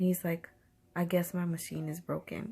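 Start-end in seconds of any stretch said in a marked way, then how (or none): 1.0-2.5 snippy, dismissive tone full of attitude. Retelling his reply that the air machine is broken: imitating a reply with attitude. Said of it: "he said it with an attitude".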